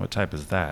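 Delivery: ordinary delivery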